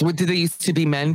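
ordinary delivery

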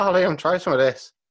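bad Irish accent, high, loud. Retelling their nan's words at a funeral, in a bad irish accent. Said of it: "I can't do the Irish accent, but she's like".

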